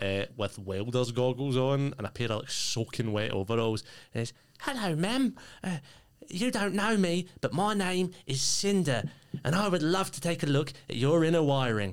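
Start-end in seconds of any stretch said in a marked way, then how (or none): 4.6-11.9 squeaky, very high-pitched, eager nerdy voice. Voicing a little prawn man greeting a player: keen, weird little prawn man. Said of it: "a little prawn man".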